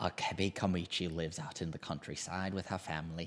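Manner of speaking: put-on British accent, laid on like a film star. Doing the synopsis aloud in a Michael Caine voice. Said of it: "in a Michael Caine voice here".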